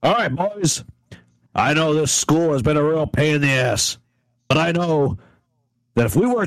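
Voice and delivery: firm, no-nonsense, stern, commanding voice. A co-captain rallying the boys before a mutiny, in a loud, stern voice. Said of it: "I'm going to speak really loud, sternly".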